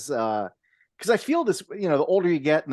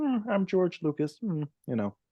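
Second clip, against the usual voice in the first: low-key, modest, understated, slightly high, with hmms; 5 semitones higher, 4 dB quieter than usual. Showing a simple way to impersonate a filmmaker: George Lucas impression. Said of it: "more modest than just".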